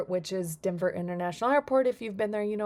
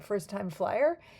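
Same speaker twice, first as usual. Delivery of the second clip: put-on dry, needling, mock sarcastic tone. Retelling an airport security guard who saw a frequent-flyer tag, mock-sarcastic question. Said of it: "he was pretty sarcastic".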